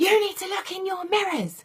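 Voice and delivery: very high, loud yelled shout. Retelling a driver who shouted into her car: imitating a man shouting. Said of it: "shouted in the car and went".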